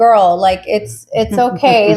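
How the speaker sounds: ordinary delivery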